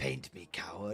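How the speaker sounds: very soft, hushed voice, barely above a murmur. Voicing the unpainted Kodiak model staring from the desk: voicing the Kodiak model. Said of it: "this Kodiak just staring at me like".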